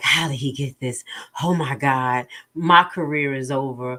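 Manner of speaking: acted panic, breathless, gasping between words, hyperventilating. Commenting on a court clip, imitating the judge hyperventilating. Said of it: "He's hyperventilating".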